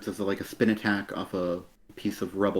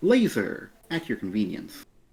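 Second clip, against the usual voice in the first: otherworldly, floating, ethereal announcer voice; 2 semitones higher than usual. Acting out a comic scene during a review: ethereal announcer voice. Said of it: "an ethereal voice announcing".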